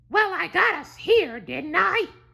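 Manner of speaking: very high, drawn-out, whiny complaining tone. Reading a story aloud, the green half's line: whining. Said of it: "whined the green half".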